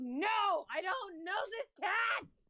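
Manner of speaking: high-pitched, rising shout in a put-on character voice. Playing a character who denies knowing a cat: in-character shout. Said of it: "I shout out".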